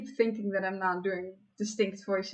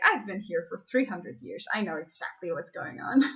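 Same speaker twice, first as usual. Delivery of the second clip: ordinary delivery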